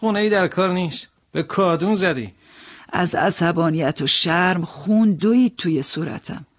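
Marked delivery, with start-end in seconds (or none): 0.0-2.3 derisive, dismissive, quick, scornful tone. Narrator reading a stranger's reply when asked his home address, smirking. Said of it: "پوزخند زد و گفت".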